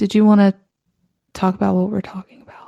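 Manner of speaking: hushed, whispered voice. Asking the co-host whether to talk about what they're discussing, whispering. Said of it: "you just got like so quiet about it".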